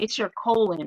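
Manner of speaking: ordinary talk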